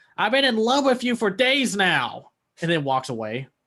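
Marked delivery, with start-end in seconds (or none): 0.2-2.3 shrill, very high shouted outburst. Retelling a movie scene where one character confesses: imitating someone yelling. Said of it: "Yoko yells at Wasabi".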